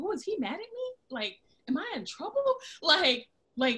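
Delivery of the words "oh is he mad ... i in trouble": mock startled, taken-aback, high, wondering. Retelling own reaction on hearing god's message: imitating own shocked reaction. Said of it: "after I got over the initial shock".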